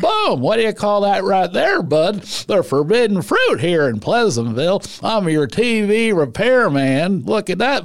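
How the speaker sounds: high put-on old-guy voice. Showing the voice dubbed for a tv repairman in a movie, an old man voice. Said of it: "I had to do him as an old guy".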